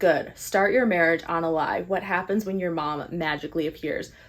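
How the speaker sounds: plain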